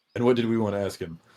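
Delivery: very low, quiet mumble under the breath. Retelling what someone mumbled so that only one person could hear: imitating a low mumble into a beard. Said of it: "mumbles in the beard as low as he can".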